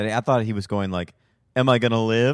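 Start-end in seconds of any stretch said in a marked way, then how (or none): 1.6-2.3 put-on sarcastic joking tone, higher and louder. Retelling how a character asked about surviving: imitating a sarcastic jokey question. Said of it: "like, a little sarcastic, like".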